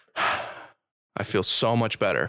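very slow, long, relieved breath out. Retelling a patient recovering after treatment: imitating a relieved big breath. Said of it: "she just takes this big breath".

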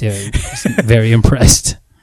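openly sarcastic, swooping and slow. Giving a verdict on a show's anticlimactic ending: sarcastic tone. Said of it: "if you can tell by my tone of voice".

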